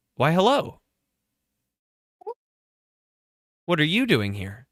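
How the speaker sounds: staticky, patchy radio sound. A game master voicing an unknown figure heard over the players' comms, through radio static. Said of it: "a patchy sort of radio static over your comms".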